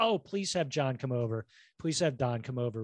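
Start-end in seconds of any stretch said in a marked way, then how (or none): none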